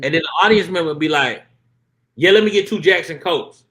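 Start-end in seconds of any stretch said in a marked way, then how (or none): 2.1-3.4 mock full-volume delivery, higher and louder. Retelling how an audience member answers the whispering waitress: imitating someone talking at full volume. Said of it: "talking at full volume".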